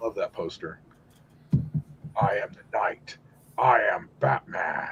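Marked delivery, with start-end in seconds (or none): 2.2-4.9 slow, hushed, whispered caped-hero voice. Quoting the animated Batman after loving the poster: Kevin Conroy Batman voice. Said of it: "That was a pretty good Kevin Conroy".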